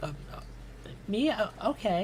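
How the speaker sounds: halting, unsure stammer. Voicing a character offered a seat at the bar: awkward, hesitant reply. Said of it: "she kinda looks around awkwardly".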